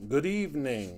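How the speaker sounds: eerie put-on spooky haunted-house voice. Welcoming everyone at the start of the evening, greeting them in a spooky voice. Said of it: "in my best spooky voice".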